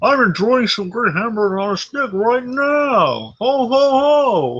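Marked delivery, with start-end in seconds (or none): 0.0-3.3 talking with mouth full, chewing, pitched up. In a podcast sponsor bit, Mike Stivic talking with a mouthful. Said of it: "with a mouthful says".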